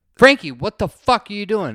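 very loud, high-pitched, baffled shout. Retelling the group's reaction to Frankie pouring water bottles into the cooler, a baffled shout. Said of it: "And we're like".

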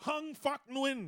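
high, dramatic North Korean state newsreader voice. Reading a man's name aloud, in a North Korean news lady voice. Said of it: "I sound like the news lady from North Korea".

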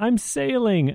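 put-on yelling movie voice. Quoting a movie scene where he's tied to a boat yelling: Bill Murray impression yelling. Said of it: "my Bill Murray".

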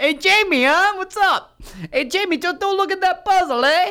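very high, loud, awful fake Boston accent. Mocking another person's Boston accent, in a bad Boston accent. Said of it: "That's not even close to Boston".

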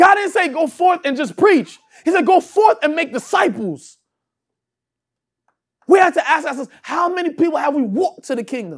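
harsh, high-pitched yelling. Preacher addressing the congregation and himself during a sermon: yelling. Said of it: "I'm not yelling at you, I'm yelling at myself too".

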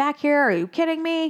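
mock hollering, a high-pitched yell. Retelling the scene where Marlin yells at Nemo: imitating Marlin yelling. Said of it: "Marlin is yelling at him".

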